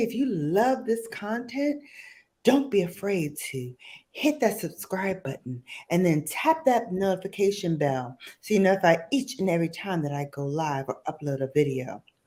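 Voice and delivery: mock speaking really softly. Mocking other beauty YouTubers' subscribe request: imitating a soft-spoken beauty YouTuber. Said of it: "I'm gonna say it really softly".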